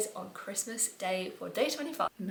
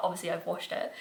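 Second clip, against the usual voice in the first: plain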